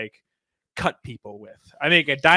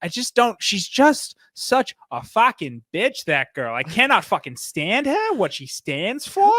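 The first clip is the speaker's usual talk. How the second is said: put-on Long Island accent slipping in, pitched high; 8 semitones higher than usual. Retelling how a friend talks when she goes off; imitating Nicolee's Long Island accent. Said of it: "she'll start slipping into like a Long Island accent".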